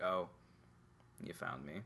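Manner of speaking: unexcited, flat monotone deadpan, barely above a whisper. Speaker imitates a game character who has been found, in a mock flat monotone. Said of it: "like a monotone game of hide-and-seek".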